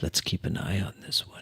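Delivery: whispered in a put-on character voice. Whispering in character into another character's ear: whispering in character. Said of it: "And I whisper".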